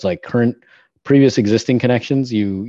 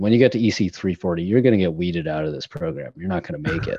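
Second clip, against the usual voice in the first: mock condescending delivery; 2 semitones lower, 3 dB quieter than usual. Retelling what a roommate said to challenge him: imitating a condescending tone. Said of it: "in a really condescending way where he said".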